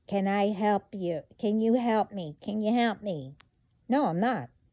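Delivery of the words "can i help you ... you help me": imploring, begging, pleading tone. Mocking someone who keeps asking for help: imitating someone pleading. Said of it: "I'm begging and pleading".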